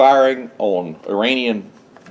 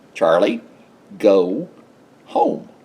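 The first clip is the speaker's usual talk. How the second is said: slight put-on Southern drawl; 3 semitones lower than usual. Retelling what a man told a u s warship: imitating a southern drawl. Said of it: "He's got a little old Southern drawl like this".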